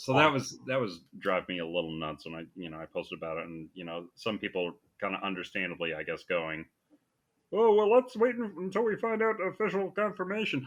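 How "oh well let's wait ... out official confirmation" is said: very high-pitched cartoon voice. Imitating online commenters urging to wait: Marvin the Martian voice. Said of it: "like, Marvin the Martian in your mind?".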